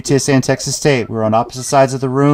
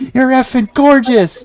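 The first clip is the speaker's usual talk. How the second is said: put-on very high, yelled-out shout; 13 semitones higher, 3 dB louder than usual. Retelling what speaker yelled out when the crowd got quiet: retelling a yell. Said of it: "I just yelled out".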